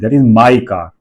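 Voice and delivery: emphasis on the word my. Explaining english sentence stress in hindi, saying the sentence with stress on my. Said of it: "मैंने stress कहाँ लगाया, माई पे".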